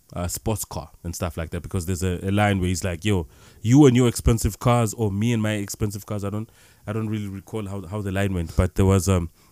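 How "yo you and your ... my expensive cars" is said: usual speaking voice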